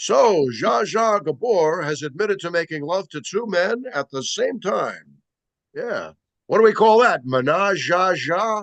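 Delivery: slow, showy emcee-style announcer delivery. Retelling an old stand-up joke from early on: imitating own announcer-style delivery. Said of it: "like an announcer".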